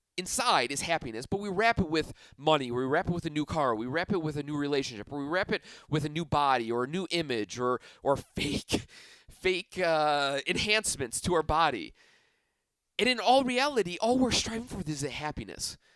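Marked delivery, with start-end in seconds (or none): 13.0-15.8 voice getting sentimental and moved, pitched up. A speaker addressing listeners who came to hear him, in a sentimental voice. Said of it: "I'm really getting sentimental here in my voice".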